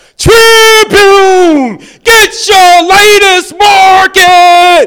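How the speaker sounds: shrill, very loud, slow, drawn-out bellow. Recalling selling papers outside a shoe store as a young man; retelling a bellow. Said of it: "I would bellow at the top of my lungs".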